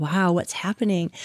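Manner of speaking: plain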